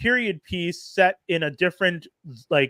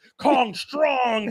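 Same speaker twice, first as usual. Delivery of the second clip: high-pitched giant ape voice; 6 semitones higher than usual. Retelling a movie scene after Kong gets a robotic arm: Kong voice. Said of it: "like Kong is like".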